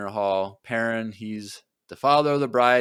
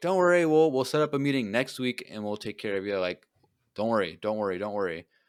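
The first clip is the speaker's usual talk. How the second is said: ordinary delivery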